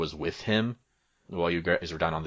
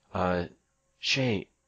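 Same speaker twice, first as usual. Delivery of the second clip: gentle voice calling out. Voicing a character calling to Shay from behind: Mirabelle, soft voice. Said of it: "a soft voice".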